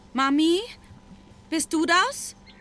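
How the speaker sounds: hesitant, unsure calling out in a high voice. Hearing her name, a girl stands up and calls out to her mother, uncertain. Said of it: "rief sie unsicher".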